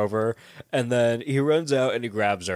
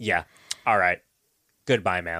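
low, irritated, fed-up, pissed-off voice; 5 semitones lower than usual. Retelling how Justin answered after a woman cursed at him: imitating Justin, mock-pissed-off. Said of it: "He's all pissed off".

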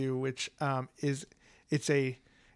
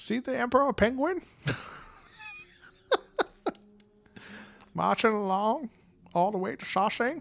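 swooping put-on voice, pitch swinging wide and high; 9 semitones higher than usual. Joking about audiobook narrators, doing a Morgan Freeman impression. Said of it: "that last part actually wasn't that bad".

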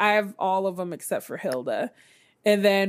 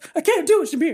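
winded, struggling for breath, high, loud breathless gasp; 8 semitones higher, 5 dB louder than usual. Retelling a character's failed breathing exercise: imitating someone out of breath. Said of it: "While he's trying to catch his breath".

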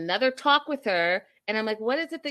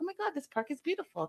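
mock, pitched-up, awed, amazed voice; 6 semitones higher, 9 dB quieter than usual. Retelling how a woman in the show greeted the park: imitating someone seeing it for the first time. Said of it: "Like, I've never been here before".

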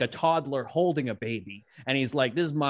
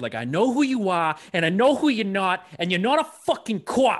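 put-on heavy, thick Boston accent, pitched up; 6 semitones higher, 3 dB louder than usual. Mocking how the characters in The Departed talk, in a Boston accent from The Departed. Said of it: "I can't do those guys like in The Departed".

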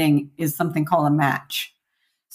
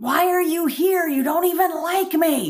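mock, very high-pitched yell; 10 semitones higher than usual. Retelling a fight with a sister on the street: retelling own past yelling. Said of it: "and I yell at her".

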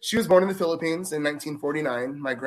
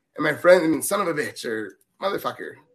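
normal talking voice

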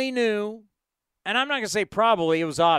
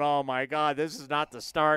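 put-on panicked voice, lower and quieter; 7 semitones lower, 4 dB quieter than usual. Speaker recalls watching the game from far away, retelling own panic. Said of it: "Yours truly is in panic mode watching this game going".

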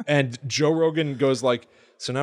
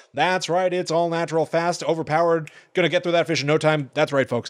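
fast-talking, speedy, rattled-off infomercial pitchman voice; 4 semitones higher than usual. Describing how a man talks, imitating his speedy salesman voice. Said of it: "he does that speedy salesman voice".

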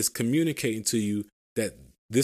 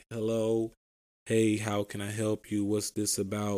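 very slow, unhurried, deliberate, drawn-out delivery; 4 dB quieter than usual. Showing how someone should answer the phone, imitating very slow speech. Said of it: "really slow and they answer the phone like".

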